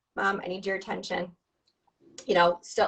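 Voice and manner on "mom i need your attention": plain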